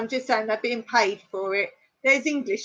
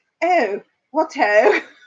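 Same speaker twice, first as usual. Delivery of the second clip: put-on English accent; 4 semitones higher, 7 dB louder than usual. Mocking how americans do an english accent: american's fake english accent. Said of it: "or else they're like".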